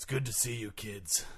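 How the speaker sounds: hoarse, raspy voice. Guest introduced on a podcast greeting the hosts, in a raspy voice. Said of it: "you got a bit of a rasp there".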